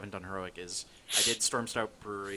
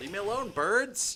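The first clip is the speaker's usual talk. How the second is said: very high, shrill screaming holler; 13 semitones higher, 6 dB louder than usual. Playing a game, being attacked by birds: screaming at birds. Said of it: "You're screaming about birds over here".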